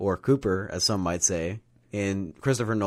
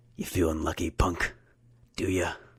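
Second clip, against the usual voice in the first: put-on tough-guy voice; 2 semitones lower than usual. Asked to do the voice, quoting a movie line: Clint Eastwood impression. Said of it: "Can you do a Clint Eastwood?".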